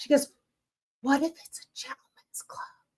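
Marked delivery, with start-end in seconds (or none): 1.0-2.6 prim, hushed, breathy whisper. Sitting in a car, retelling what she said beside the speaker: retelling her whisper. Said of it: "And she like whispers".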